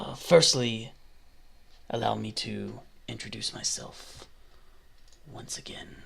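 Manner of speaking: put-on breathy, rough, very soft, low old voice. A very old half-elf introducing himself again, rough low old half-elf voice. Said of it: "So he's a very old half elf. ... doesn't do rough, low voices like that very often".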